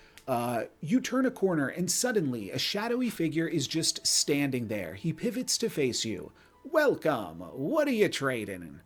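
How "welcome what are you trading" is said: barkeep-style swooping delivery. Narrating a game, voicing a shadowy figure who greets the player, Bartender Bob voice. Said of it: "bartender Bob voice there".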